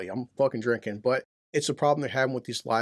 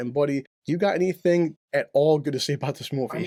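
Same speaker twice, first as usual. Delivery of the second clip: ordinary delivery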